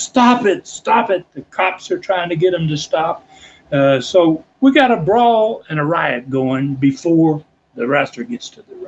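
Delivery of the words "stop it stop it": high, urgent, put-on screaming cry. Retelling a brawl before a wrestler reaches the ring: imitating own screaming. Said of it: "I'm screaming out".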